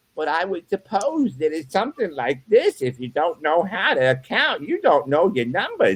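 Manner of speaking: English spoken with a Yiddish-inflected accent.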